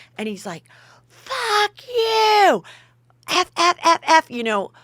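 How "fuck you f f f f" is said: mock very high, slow, drawn-out, crazed furious screaming. Speaker retells a man cursing and screaming at him: retelling furious screaming. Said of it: "just screaming at me like a crazy person".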